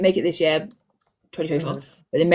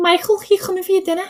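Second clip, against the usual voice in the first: very high-pitched Scouse Liverpool accent; 12 semitones higher than usual. Speaker shows the one phrase they can say in a liverpool accent. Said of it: "like a Liverpool accent".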